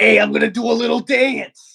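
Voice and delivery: high, rough voice, ground out like gravel. Speaker performing as Penguini, announcing a little dance: Penguini rock-tumbler voice. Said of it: "It's like a rock tumbler".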